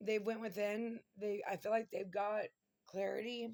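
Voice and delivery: choked-up voice, near tears, holding back crying. Doing a tarot reading, near tears. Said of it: "I'm trying not to cry here".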